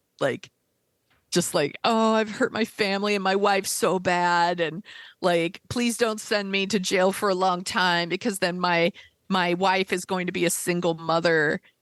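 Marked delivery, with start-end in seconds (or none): 1.9-11.6 mock crying, put-on tearful voice. Retelling a plea to the judge before sentencing, imitating Jared crying. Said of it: "he's all crying to the judge".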